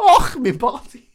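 fake Scottish accent. Two podcast hosts in a bit: bad scottish accent. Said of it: "With our spot on, well researched accents".

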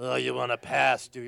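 strange put-on orc voice, rough, snarling growl. A dungeon master voicing an orc at the end of a bridge, in a strange orc voice. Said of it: "Or I could adopt some strange voice".

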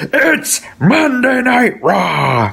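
high, drawn-out, swooping delivery. Retelling an old TV commercial's ending: Vince McMahon voice. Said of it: "you hear Vince McMahon's voice".

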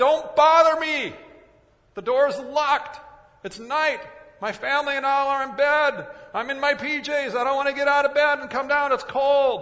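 high, loud, irritated yell.

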